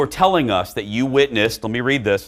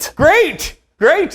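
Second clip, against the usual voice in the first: mock, very high "great" forced through clenched teeth; 6 dB louder than usual. Recreating a favorite moment, a dater's reply, mock gritted-teeth 'great'. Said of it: "as he says through gritted teeth".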